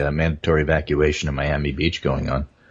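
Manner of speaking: usual speaking voice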